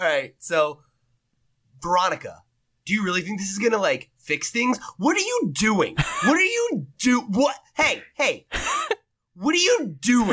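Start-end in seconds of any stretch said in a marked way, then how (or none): 1.8-10.3 high, swooping, animated character voice. Doing one more impression of Kale for the other speaker: Kale impression. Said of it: "I got one more Kale impression".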